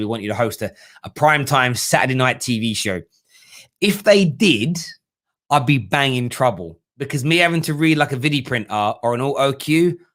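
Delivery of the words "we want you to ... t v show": ordinary talk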